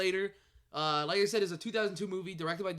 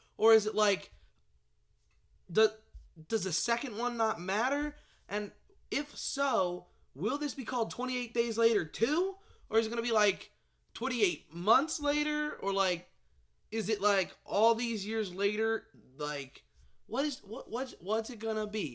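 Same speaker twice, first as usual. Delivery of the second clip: high, hyped, worked-up excited rant. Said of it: "va-va-voom in the very beginning there".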